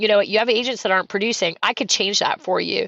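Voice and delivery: ordinary delivery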